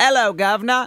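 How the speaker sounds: put-on London accent. Their go-to line for getting into a London accent: put-on London accent. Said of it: "this is my go-to when I'm trying to get into my London accent".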